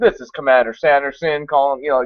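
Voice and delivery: put-on Southern accent. Retelling a broadcast a friend's dad recorded, Commander Sanderson southern accent. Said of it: "So he's doing this like southern accent".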